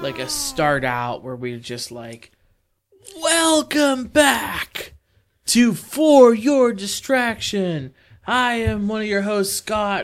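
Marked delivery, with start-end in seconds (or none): 3.2-10.1 yelling in a whisper, pitched up, drawn out. A podcast host starts a new intro for the show, whisper-yelling. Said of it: "you're like whisper yelling right now".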